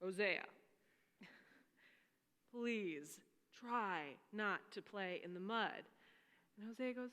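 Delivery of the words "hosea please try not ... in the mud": firm, slow, stern, fatherly tone. Retelling a father's words to his son: imitating a stern father. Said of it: "he's a little bit more stern this time".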